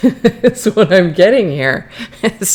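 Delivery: talking through laughter. Describing a reading about a person who is not calm: laughing while talking. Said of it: "I'm sorry I'm laughing".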